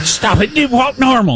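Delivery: high, exasperated scolding tone.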